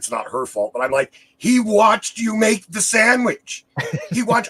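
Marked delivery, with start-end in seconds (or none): 1.4-4.5 very high-pitched, loud, furious ranting yell. Retelling getting angry about a sandwich complaint: imitating himself yelling. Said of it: "I'm yelling at her".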